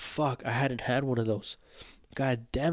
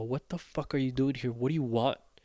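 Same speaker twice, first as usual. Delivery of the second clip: acted-out rude, unwelcoming, hostile tone. Retelling how some medical staff treated the visit: imitating hostile staff attitude. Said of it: "their attitude was just like".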